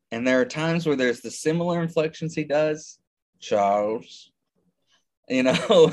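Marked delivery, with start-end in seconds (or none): 3.4-4.3 put-on villain voice. Quoting the same actor's other role, talking to Charles: Magneto impression. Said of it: "this is the same guy who's Magneto".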